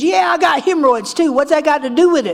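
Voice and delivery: mock screaming, high-pitched. Retelling an old man in the meeting screaming back: imitating someone screaming. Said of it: "he screamed at me".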